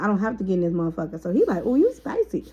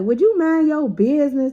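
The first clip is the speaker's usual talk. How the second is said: put-on harsh mean voice, higher pitch and louder; 5 semitones higher, 5 dB louder than usual. Retelling how someone snapped at another listener: imitating someone talking mean. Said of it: "mean to her".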